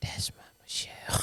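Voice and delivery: soft whisper.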